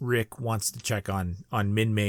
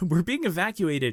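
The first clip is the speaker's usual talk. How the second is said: mock, high, extremely upbeat cheery tone; 9 semitones higher than usual. Recapping a show's scene, imitating Minmei's super-upbeat tone. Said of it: "the most upbeat tone I've ever heard".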